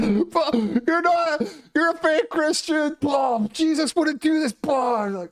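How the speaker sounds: mock very high, shrill screaming rant. Retelling a man screaming at him while fighting: imitating someone screaming.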